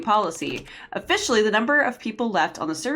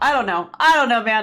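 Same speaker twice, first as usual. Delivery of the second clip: ordinary talk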